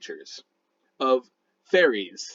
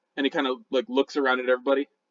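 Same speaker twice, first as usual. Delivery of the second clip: ordinary talk, nothing marked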